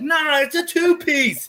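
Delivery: very high, loud blare. Retelling how Johnny corrected the speaker about his pajamas: imitating Johnny's loud voice. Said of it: "in his loud voice".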